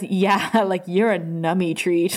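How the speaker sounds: mock, super-sarcastic tone. Recapping an episode, retelling one character's line to another super sarcastically. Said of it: "super sarcastically".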